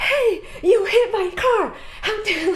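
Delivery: play-acted outraged woman, high, angry yelling. Retelling how a lady yelled after a light car bump, imitating a lady yelling. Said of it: "this lady just starts yelling at me".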